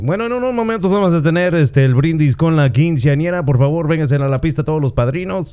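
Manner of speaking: Mexican radio announcer voice. Recalling doing sound at quinceañeras, announcing the toast in a Mexican radio announcer voice. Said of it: "I could do that announcer voice, the DJ... radio voice. The Mexican radio guy".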